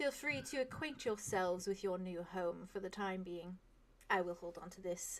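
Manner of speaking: gentle, very soft, far hushed murmur. Game master voicing a woman turning from her crew to the players, very softly spoken. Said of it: "she just very softly says".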